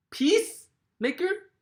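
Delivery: strong stress on peace in peacemaker. Asking where the emphasis falls in the word, stress on PEACE in peacemaker. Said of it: "where's the emphasis of the word".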